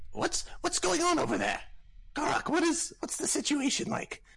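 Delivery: piercing voice. Game master voicing a character calling out to garak, in a shrill voice. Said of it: "You hear that same shrill voice say".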